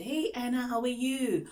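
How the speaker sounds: bright, enthusiastic tone. Showing how a teacher greets a student anna: excited greeting. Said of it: "you need to sound excited".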